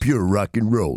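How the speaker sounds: put-on American accent, voice dropped very low. Answering a question about the accent on the show, in an american accent. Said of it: "Is that your American accent?".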